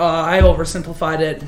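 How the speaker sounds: usual speaking voice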